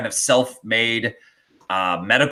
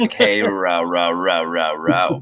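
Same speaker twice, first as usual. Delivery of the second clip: every word stretched, deep and slow; 5 semitones lower than usual. Explaining a running joke with a chat viewer: Matthew McConaughey impression. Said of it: "We always act like Matthew McConaughey would be like".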